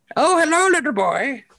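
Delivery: put-on very high, slow, drawn-out old lady voice. Joking that a co-host looks like an old lady, then greeting: old lady voice. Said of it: "you look like an old lady".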